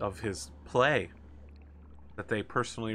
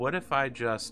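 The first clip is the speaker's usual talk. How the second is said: plain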